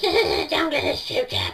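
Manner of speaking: put-on squeaky little kid voice. Describing how five-year-olds play pretend, in a squeaky little kid voice. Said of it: "With a squeaky voice like this".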